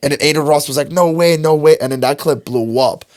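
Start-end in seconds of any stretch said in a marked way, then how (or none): none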